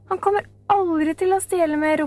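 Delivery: high, shouted retort. She answers a scornful remark about a man in prison, shouting. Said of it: "ropte Camilla".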